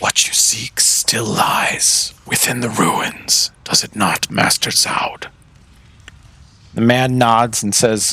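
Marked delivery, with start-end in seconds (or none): 0.0-5.3 odd, strange, airy whispered voice. A narrator voices an unseen speaker in the room addressing Master Zaud, strange, airy voice. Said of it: "You hear a very strange and airy voice say".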